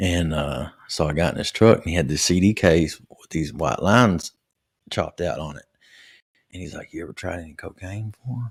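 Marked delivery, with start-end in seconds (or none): 6.9-8.5 hushed, soft half-whisper under the breath. Retelling a friend's offer in his truck: imitating a half-whisper. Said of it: "why are you whispering".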